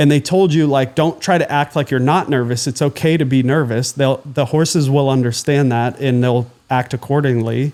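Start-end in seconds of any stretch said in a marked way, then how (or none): none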